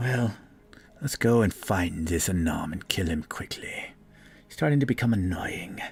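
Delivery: muttered under the breath. Play a character who walks along following another, muttering to herself. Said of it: "She kind of mutters to herself too".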